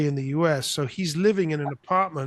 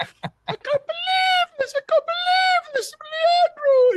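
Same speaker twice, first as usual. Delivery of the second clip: put-on very high, frantic, drawn-out wail; 4 dB louder than usual. Retelling a mother screaming in the middle of the street: imitating someone screaming.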